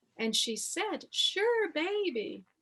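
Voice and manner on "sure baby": put-on Southern accent like a grandmother's, pitched up. Speaker retells a woman from alabama agreeing to a hug: imitating a southern accent. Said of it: "she spoke with her Southern accent and she sounded like my Southern grandmother".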